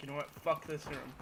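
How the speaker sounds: normal talking voice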